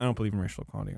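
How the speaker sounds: put-on whisper under breath. Retelling a character's line before Congress: imitating a whisper under breath. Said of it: "whisper it under his breath".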